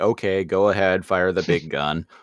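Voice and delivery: put-on careless, offhand, brushing-off dismissive tone. Retelling a scene, quoting Dot: imitating Dot dismissively. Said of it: "In this very, like, dismissive way".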